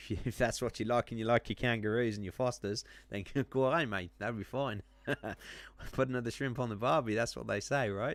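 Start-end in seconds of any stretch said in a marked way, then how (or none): 0.0-7.1 clumsy, bad put-on Australian accent. Admitting they're not good at it, trying out: bad Australian accent. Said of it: "I'm not too good at the Australian accent, but I'll give it a go".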